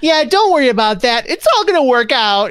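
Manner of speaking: very high, fake cheery, forced positive tone. Explaining fake positivity by imitating someone always upbeat: imitating fake positivity. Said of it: "if you're always like".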